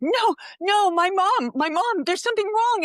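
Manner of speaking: mock freaking-out, high, drawn-out panicked voice. Retelling a daughter's panic when her mom passed out: imitating Julia freaking out. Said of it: "'cause she's freaking out".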